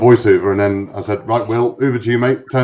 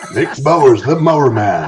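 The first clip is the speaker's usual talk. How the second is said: put-on announcer voiceover voice. Repeating a line from a promo voiceover to the others: James Earl Jones voice. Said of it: "James Earl Jones number two".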